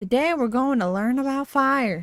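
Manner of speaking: put-on Southern accent. Retelling a scene where Happy speaks to kids, Happy in a southern accent. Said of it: "I just do a southern accent".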